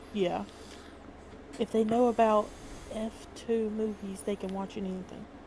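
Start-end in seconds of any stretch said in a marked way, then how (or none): 1.6-5.3 hushed, quiet whisper. Slipping in a tip about a movie site: whispering. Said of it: "And I whispered it".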